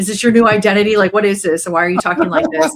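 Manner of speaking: mock skeptical, eye-rolling tone. Retelling how family reacted to the new way of talking: imitating eye-rolling family. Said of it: "rolling their eyes like".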